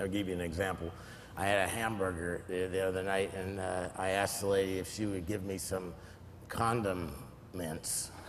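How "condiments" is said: condiments broken mid-word by a pause. Giving an example of asking a lady for condiments, pause inside condiments. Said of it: "if you put a pause in the wrong place, in a, in a word".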